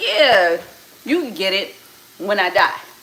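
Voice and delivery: mock, dry, sarcastic, dismissive tone. Retelling an uncle's reply to a tattoo request: imitating a sarcastic remark. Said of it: "Being sarcastic".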